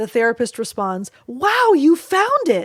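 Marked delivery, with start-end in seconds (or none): 1.3-2.7 gushing over-the-top delight, high, swooping, very drawn out. Showing a therapist's response to a calm child: overly excited voice. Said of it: "an overly excited voice".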